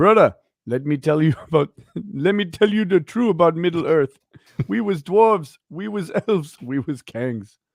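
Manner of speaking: put-on speaking with South African accent. Performing a requested line, in a South African accent. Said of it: "please say in your South African accent".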